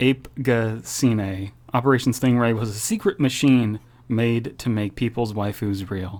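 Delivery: ordinary delivery, nothing marked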